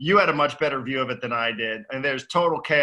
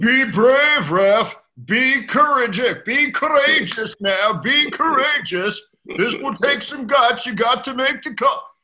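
put-on very high, loud, urgent English accent; 11 semitones higher, 6 dB louder than usual. Recounting a defender imploring the referee, the speaker does Johnny Fenwick's English accent. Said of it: "maybe not my best English accent ever".

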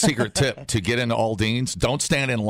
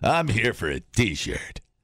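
put-on spooky, scary voice. Showing a friend how to ask the lady for a t-shirt, in a scary voice. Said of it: "Why are you using that scary voice?".

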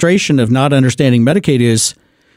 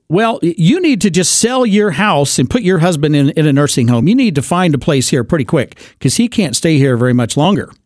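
ordinary talk

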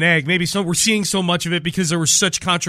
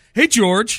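put-on taunting, trash-talking tone; 4 semitones higher than usual. Retelling what one player said to another while blocking: George Kittle trash-talky imitation. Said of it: "kind of in a trash talky way".

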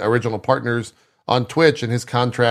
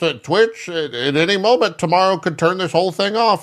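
put-on old man voice, much higher; 7 semitones higher than usual. Speaker on losing one's livelihood, repeating a long-held warning in an old man voice. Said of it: "how you use like the old man voice".

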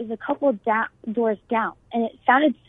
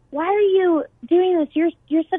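yelling with voice raised high; 7 semitones higher than usual. Retelling how friends on the floor yelled at a group: imitating friends yelling. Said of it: "I hear them yelling".

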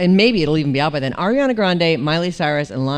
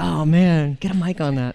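ordinary delivery

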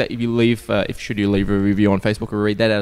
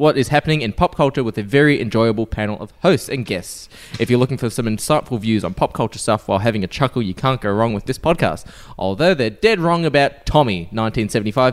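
plain

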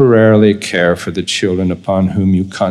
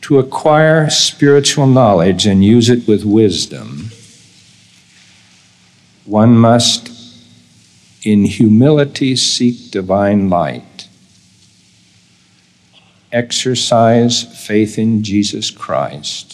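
reading slowly and deliberately; 2 semitones higher than usual. Reading a statement of principle aloud so listeners can take notes: reading slowly. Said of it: "I'm going to read it slowly".

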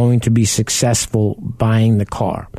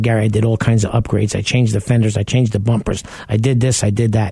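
ordinary delivery

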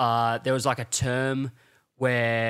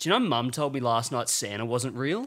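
ordinary talk

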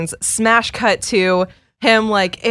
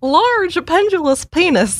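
put-on comical, high-pitched little old lady voice; 9 semitones higher than usual. Repeating a phrase on request, imitating a famous old woman: little old lady voice. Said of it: "had this really hilarious little old lady voice".

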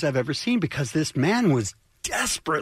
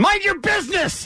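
put-on very high-pitched, shrill old man screech; 14 semitones higher than usual. Acting out a story, playing the old man who was offered help, imitating an old man screaming. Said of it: "He screams it".

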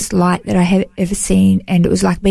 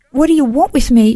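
mock tearful, crying, pleading voice, much higher; 6 semitones higher than usual. Telling a listener about hearing a voice, retelling a tearful plea. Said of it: "And I started crying more".

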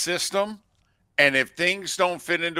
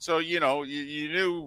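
normal talking voice

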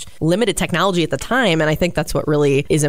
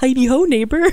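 very high-pitched little frog puppet voice; 9 semitones higher than usual. Trying this voice for the first time, in a Kermit the Frog voice. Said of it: "I've never tried Kermit, but I'm going to try it".

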